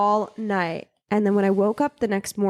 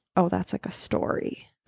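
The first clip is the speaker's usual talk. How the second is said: put-on serious tone, quieter; 5 dB quieter than usual. Retelling a date's answer about a tattoo: imitating a serious tone. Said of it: "got all serious".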